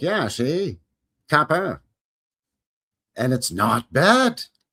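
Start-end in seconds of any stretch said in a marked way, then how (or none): 0.0-1.8 put-on old 1940s film noir wise-guy gangster voice. Speaker describing a show filmed like film noir, imitating 1940s film noir gangster talk. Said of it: "where they all talk like".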